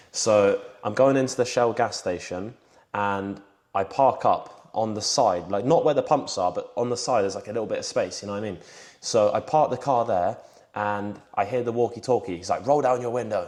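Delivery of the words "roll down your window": furious, angry cop voice. Retelling a police officer's order over the walkie-talkie: imitating an angry police officer. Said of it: "he's angry, like, he wants to kill me".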